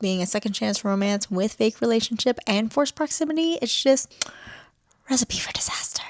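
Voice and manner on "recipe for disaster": breathy whisper under the breath. Telling viewers about the book before a writing sprint, whispering.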